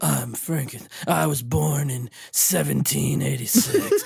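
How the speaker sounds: deep, very low, rough, gravelly movie narration. Mock the way he talks through the whole awful movie, as a low gravelly movie voiceover. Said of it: "he talks like that the whole movie".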